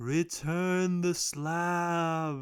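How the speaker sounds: echoing voice, "slab" drawn out. Describing a story, the speaker voices an unseen figure in an echoey voice. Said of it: "this like echoey voice".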